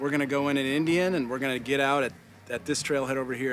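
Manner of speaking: normal talking voice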